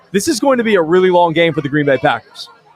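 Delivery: ordinary talk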